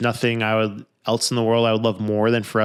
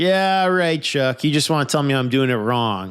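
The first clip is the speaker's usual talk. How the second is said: mock tongue-in-cheek, confrontational, sing-song sarcasm; 4 semitones higher than usual. Retelling how one man answered an offer to review his law cases, mock tongue-in-cheek jab. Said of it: "Kind of tongue in cheek, kind of like confrontational".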